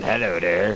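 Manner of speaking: creepy goblin creature voice. Imagining a creepy goblin running at people with hands out: creepy goblin voice. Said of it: "this freaking creepy-ass goblin".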